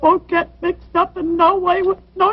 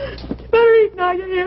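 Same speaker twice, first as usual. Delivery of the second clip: tearful pleading with audible sobs. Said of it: "make her stop crying".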